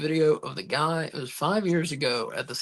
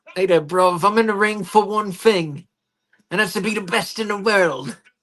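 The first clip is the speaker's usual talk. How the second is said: terrible, loud wrestling announcer style; 4 semitones higher, 8 dB louder than usual. Reading a chat idea aloud, trying a terrible Will Ospreay impression. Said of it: "That's a terrible impression".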